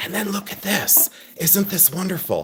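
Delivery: hushed whisper, very soft, barely audible. Speaker mocks a once-loud woman who now has followers, imitating her whisper. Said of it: "she like whispers".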